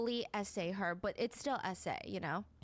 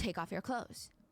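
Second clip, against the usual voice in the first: put-on stern, authoritative voice; 2 semitones lower than usual. Retelling a spoken order: imitating Epstein's stern voice. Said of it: "Epstein had a very stern voice".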